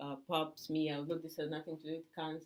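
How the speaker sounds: low, quiet voice.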